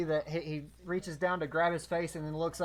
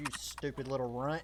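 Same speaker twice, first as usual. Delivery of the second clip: low muttering, half to himself, under the breath; 3 semitones lower, 4 dB quieter than usual. Game master voicing a character whose slave turns against him: muttering. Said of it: "he mutters".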